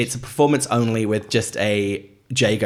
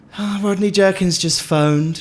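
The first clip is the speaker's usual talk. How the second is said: very high-pitched, breathed-out, exhaled delivery; 10 semitones higher, 3 dB louder than usual. Quoting a glimpse of Peter Lorraine walking in: Peter Lorraine impression. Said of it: "That was a really good impression".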